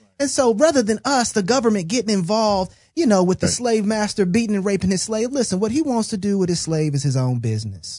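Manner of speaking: put-on Southern accent, like a southern politician. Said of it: "With a Southern accent".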